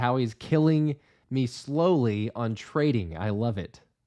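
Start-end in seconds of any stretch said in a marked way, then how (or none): none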